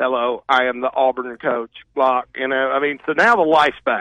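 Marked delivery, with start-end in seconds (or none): 0.0-1.7 flat, monotone robot voice. Mocking the Auburn coach's lack of enthusiasm, Harsin as a robot voice. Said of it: "like Harsin was like a robot".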